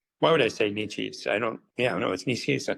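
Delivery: ordinary talk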